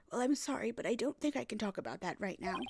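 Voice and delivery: put-on elderly woman's voice, old lady. Voicing a character asked about Puree, in an old lady voice. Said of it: "I'm giving her an old lady voice".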